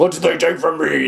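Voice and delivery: weird, rough, creaky voice. Retelling a film scene where Kuze questions her: Kuze's weird voice. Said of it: "in his weird voice".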